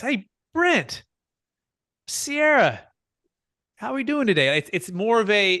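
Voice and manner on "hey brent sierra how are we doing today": high, light, playful, curious and friendly tone. Speaker demonstrates different voice types, now the playful, curious voice. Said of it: "the playful, like curious voice".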